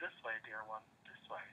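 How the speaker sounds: very quiet, hushed voice. Describing a meditation, speaker quotes a voice heard in her head: very soft voice. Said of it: "I heard this very soft voice in my head saying".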